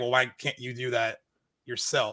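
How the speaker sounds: ordinary delivery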